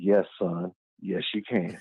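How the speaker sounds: dropped, deep, bassy put-on bass voice. Retelling how he answered his son, with some bass in his voice. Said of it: "I put some bass in my voice".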